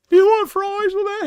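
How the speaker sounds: put-on very high, loud, awkward pimply teenager voice. Showing a voice he could use, as The Simpsons' pimply-faced teenager. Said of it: "the pimply faced teenager from The Simpsons".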